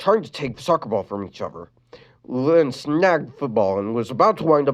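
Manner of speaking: ordinary delivery, nothing marked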